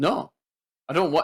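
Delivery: the word no said with an odd, bent inflection. Quoting an actor's film line and his inflection: Christopher Walken inflection on no. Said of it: "the way he says "no" and that inflection".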